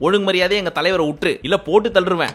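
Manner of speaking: ordinary talk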